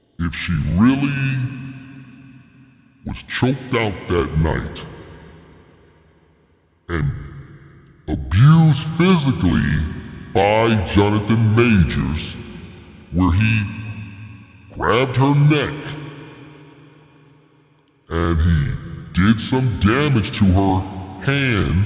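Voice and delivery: very low, deep put-on monster voice. Speaker addresses the folks listening, in a monster voice. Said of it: "in the monster voice".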